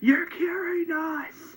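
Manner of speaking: put-on, very high, loud shouted voice. Recapping a scene from a show, retelling a character's yell. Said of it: "Rick yells and says".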